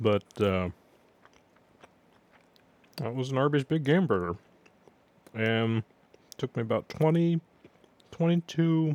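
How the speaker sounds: talking with mouth full, chewing food. Just finished eating a burger, still swallowing the last pieces, talking with mouth full. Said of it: "pieces in my mouth".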